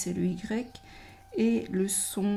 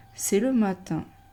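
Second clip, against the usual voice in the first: pitch drops at the end on matin; 4 dB louder than usual. Teaching reading aloud, sentence ending with falling pitch on matin. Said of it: "à la fin des phrases, on baisse le ton de la voix. Comme ça".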